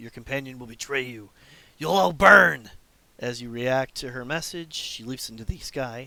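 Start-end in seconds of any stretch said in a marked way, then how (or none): 0.0-2.7 very loud, harsh, scratchy voice sounding cruel. Narrator voicing a winged woman's barked threat to the listeners, scratchy, cruel female voice. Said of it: "scratchy and cruel".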